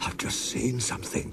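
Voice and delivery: trembling, breathy, shaky, frightened near-whisper. Reading a story aloud, speak a character's line in a shaky voice. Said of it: "said Toby in a shaky voice".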